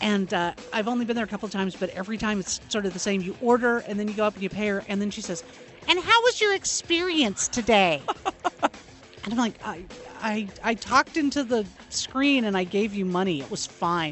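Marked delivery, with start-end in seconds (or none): 5.9-8.0 really high, polite counter-staff voice. Speaker retells what the woman they pay says, imitating her really high voice. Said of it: "she has a really high voice".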